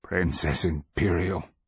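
croaking demon voice with croaked-out words. Reading a story, the kneeling captain addresses the princess in a croaking voice. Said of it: "it croaks".

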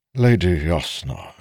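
plain reading voice

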